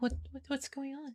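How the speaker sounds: meek, tiny, timid, very quiet voice. A character walks up with the men to a gem seller, in a small timid voice. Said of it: "in this real small, like timid voice".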